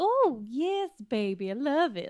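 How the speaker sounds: put-on ladylike, genteel American Southern accent. Showing the kind of southern accent tried in louisiana: imitating a ladylike southern accent. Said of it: "very, like, ladylike Southern".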